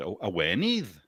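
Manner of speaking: put-on Welsh accent. Suggesting a word is easier to say this way: Welsh accent. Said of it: "if you do it in a Welsh accent".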